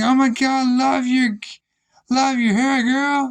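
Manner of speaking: brash, over-loud, high, gushing chatter. Retelling what a coworker always said: imitating a loud coworker. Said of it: "freaking loud".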